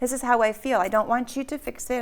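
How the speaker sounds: ordinary talk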